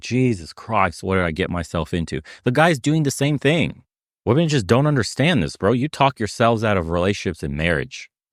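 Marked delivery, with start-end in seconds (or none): 0.0-2.2 put-on weary, eye-rolling exasperation, woman's voice. Acting out a woman on a date: imitating an eye-rolling woman. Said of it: "rolling her eyes like".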